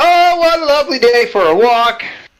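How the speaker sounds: very loud, high, shrill, showy shout. Walking away from the group ringing a bell, the character calls out very loudly. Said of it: "very loudly".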